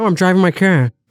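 put-on Boston accent on everyday words. Mimicking how some people say certain words: boston accent. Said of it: "It's all just a Boston accent".

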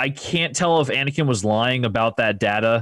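plain

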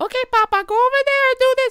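very high, very loud, shrill boss voice. Imitating an old Puerto Rican supervisor named Henry: imitating his voice. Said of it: "he sounds like".

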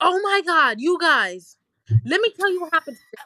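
loud excited put-on voice. Doing an impression of Jasmine telling everyone about her day: loud Jasmine impression. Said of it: "you gotta do a Jasmine impression".

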